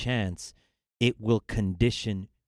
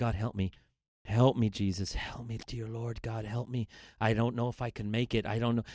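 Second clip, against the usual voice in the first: put-on muttering under the breath, quieter; 5 dB quieter than usual. Retelling praying while writing a formula for students: retelling a prayer under breath. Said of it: "literally I was praying under my breath".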